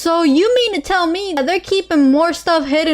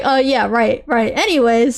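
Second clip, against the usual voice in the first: mock bored-sounding, uninterested delivery, lower pitch; 5 semitones lower than usual. Mocking an interviewer who sounds uninterested: imitating an uninterested interviewer. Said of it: "you sound so uninterested".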